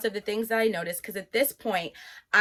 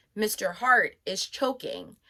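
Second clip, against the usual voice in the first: usual speaking voice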